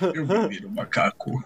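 put-on deep, mock-serious voice. Repeating a quoted line a second time, in a put-on deep, serious voice. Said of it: "com uma voz grossa e séria".

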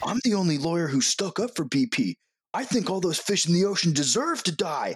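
wild, hollering, high-pitched yelling rant. Retelling a comedy bit yelling on Wall Street: imitating Eric Andre yelling. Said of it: "yelling on Wall Street about".

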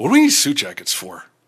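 put-on surly voice.

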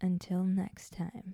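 scary, spooky voice. Asked by the podcast host to do her outro, in a scary voice. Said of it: "that sounds scary".

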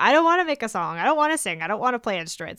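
loud, whiny, sing-song, swooping up and down. Imitating students coming into a music group session: mimicking a whiny voice. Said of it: "exactly with that same whiny voice".

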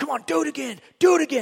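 mean, pushy loud voice. Imagining how he reacts when you're struggling, imitating a mean coach. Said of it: "like the mean coach".

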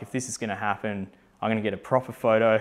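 ordinary delivery

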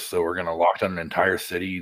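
ordinary talk

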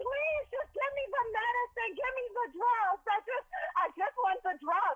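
put-on very high-pitched screaming. Retelling how you begged for medicine after being refused an epidural, imitating your past self screaming. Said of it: "I was screaming".

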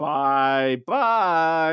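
put-on crazy person voice. Recapping an episode, quoting Jet in a crazy person voice. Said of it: "in a really crazy person voice".

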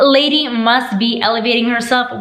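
ordinary talk, nothing marked

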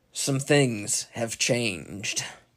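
mean, menacing put-on voice. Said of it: "in a mean voice".

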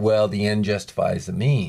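ordinary delivery

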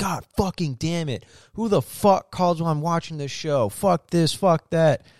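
fake hot-tempered swearing rant. Retelling a movie scene where a hot-tempered dad's show is interrupted: imitating an angry outburst. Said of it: "my dad had a fucking temper".

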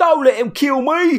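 tacky Mockney voice. Retelling the other guy's line in a fight scene, naff Mockney Steptoe voice. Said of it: "that naff Mockney voice".

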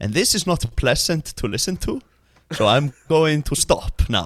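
put-on English accent. Speaker showing how most of their friends speak English, friends' English-speaking voice. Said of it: "they speak like this".

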